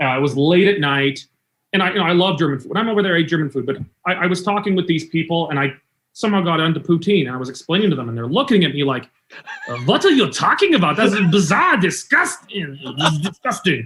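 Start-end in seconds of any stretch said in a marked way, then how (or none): 9.7-13.9 put-on French accent, incredulous, animated and swooping. Retelling how people reacted to hearing about poutine: imitating Germans in a French accent. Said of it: "that was more of a French accent".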